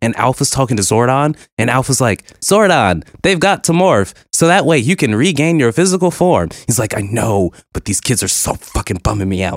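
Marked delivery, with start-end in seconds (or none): 2.4-6.5 very high-pitched sidekick voice. Retelling a Power Rangers movie scene, the speaker voices Alpha talking to Zordon, Alpha impression. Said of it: "You did a really good Alpha impression there".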